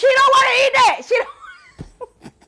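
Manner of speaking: put-on heated arguing voice. Retelling her back-and-forth over whether someone would eat, retelling a heated argument. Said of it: "we going back and forth".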